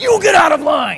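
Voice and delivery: enraged bellow at full blast, very loud, high. Retelling how a man in line went ballistic: imitating a furious yell. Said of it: "went ballistic".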